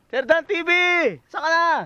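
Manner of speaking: calling out, pitched high.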